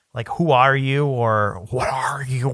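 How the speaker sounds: fake quiet, intimidated voice. Describing a quiet movie scene and acting out a character's line, imitating a quiet intimidated voice. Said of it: "but even like quiet and he's intimidated".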